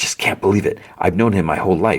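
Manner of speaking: put-on whisper. Retelling a tv scene line by line: imitating a whisper. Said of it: "And then she's whispering".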